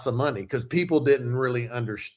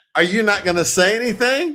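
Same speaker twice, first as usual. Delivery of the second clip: mock fuming, fed-up, raised, pitched-up outburst; 9 semitones higher, 5 dB louder than usual. Retelling a wait for praise over folded towels: imitating his own fuming. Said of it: "And now I'm fuming".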